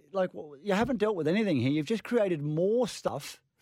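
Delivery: high, hyped-up, wound-up rant. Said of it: "you've had a lot of sugar".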